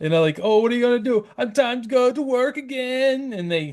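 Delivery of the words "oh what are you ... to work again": clumsy fake Jamaican accent, pitched high. Retelling what their Jamaican family would say: bad Jamaican accent. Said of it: "obviously I'm good at my Jamaican accent".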